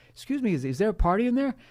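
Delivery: put-on innocent voice. Retelling how he knocked on the party door, imitating the most innocent voice. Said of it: "in the most innocent voice ever".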